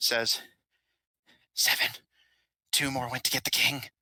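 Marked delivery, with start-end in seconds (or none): 1.5-3.8 spoken in a whisper. A game master voices a character speaking only to one player character, whispering. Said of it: "And he whispers".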